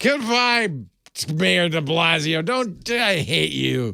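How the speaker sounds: acted-out, tipsy, drunken hollering yell. Retelling a TV anchor near the end of the broadcast, imitating Andy yelling. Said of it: "he's starting to yell".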